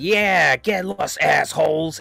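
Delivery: mock scary, sudden, abrupt snap. Retelling a line from a movie scene: imitating a scary sudden snap. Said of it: "the way she said it was, wow".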